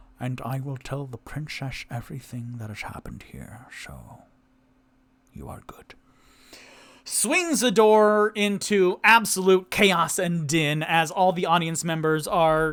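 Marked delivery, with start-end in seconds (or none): 0.2-5.9 hushed whispered aside, very quiet, barely audible. Speaking in character, leaning over to tell another character: whispering. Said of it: "he whispers over to Toot Toot".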